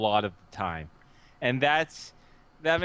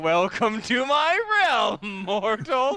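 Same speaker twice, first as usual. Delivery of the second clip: slow, deliberate, high, drawn-out delivery; 6 semitones higher, 3 dB louder than usual. Retelling how another player spoke as Mila: imitating Mila's voice. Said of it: "speaking as Mila's voice".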